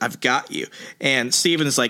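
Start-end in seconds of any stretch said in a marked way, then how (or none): 0.0-0.7 quiet, hushed, soft whispered voice. Retelling a comic scene where a character whispers: imitating a whisper. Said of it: "he whispers".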